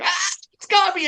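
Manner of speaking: put-on high-pitched screaming cry like a child. Retelling a daughter's bite by a turtle: imitating a child screaming. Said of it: "she is screaming".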